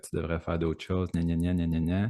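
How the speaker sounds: plain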